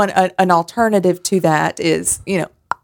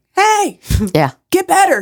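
put-on cartoon character yelling, higher; 12 semitones higher than usual. Retelling a cartoon where someone yells at a person in pain: imitating a cartoon character yelling. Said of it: "sort of yells at 'em like".

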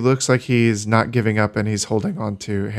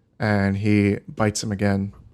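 ordinary delivery

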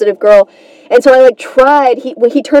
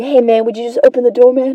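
put-on relaxed smiling voice, getting quieter; 4 dB quieter than usual.

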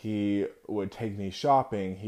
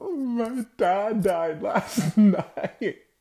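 very high, slow, tearful blubbering and sobbing; 13 semitones higher, 6 dB louder than usual. Retelling the speaker's past self speaking to a woman at school: retelling crying. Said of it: "And I'm crying".

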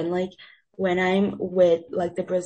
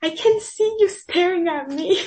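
louder, higher-pitched mock speech; 12 semitones higher, 5 dB louder than usual. Retelling what a loud guy on a bus said to girls: imitating someone talking loudly. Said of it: "being very loud".

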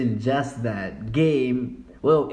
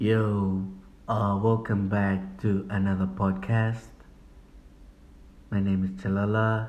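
calm put-on podcast host voice; 3 semitones lower, 3 dB quieter than usual. Opening a podcast and introducing themself in a put-on calm podcast voice. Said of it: "Why are you talking like that?".

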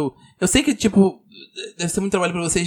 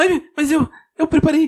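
very high, quavering, jittery, nervous, trembling stammer; 9 semitones higher, 3 dB louder than usual. Told on stage his speech will get nowhere, he answers trembling, nervous. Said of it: "Ele começa a tremer".

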